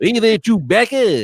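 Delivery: high, cartoony voice. Greeting Chewbacca in a Lando Calrissian impression turned Simpsons voice. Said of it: "Lando Calrissian impression that just turned into a Simpsons guy".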